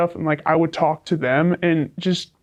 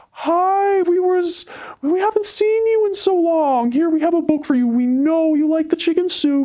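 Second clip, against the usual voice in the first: put-on sugary sweet voice, higher pitch; 12 semitones higher than usual. Retelling how a teacher offered a book: imitating a teacher's fake sweet voice. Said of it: "she had this very fake voice".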